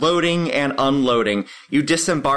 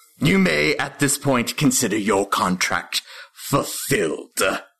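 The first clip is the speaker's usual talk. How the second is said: draconic, imp-like creature voice; 4 semitones lower than usual. Narrator voicing an imp dismissing its associate: draconic imp voice. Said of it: "the imp speaks in a draconic voice".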